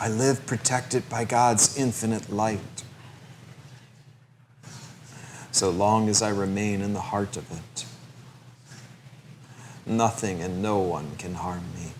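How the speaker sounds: quiet, soft, hushed whisper. Leading a repeated affirmation, now in a whisper. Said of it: "Now in a whisper".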